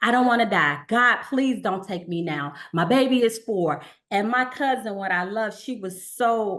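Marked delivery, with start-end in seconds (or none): 0.0-3.8 play-acted, tearful, crying voice through sobs. Retelling own words after hearing a cancer diagnosis: retelling own crying plea. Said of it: "And I was just crying".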